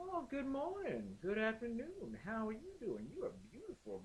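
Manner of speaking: very high, sing-song, swooping catcaller lilt. Mocking how the men in the original video greet women, lilting catcaller voice. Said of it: "has this lilt in his voice".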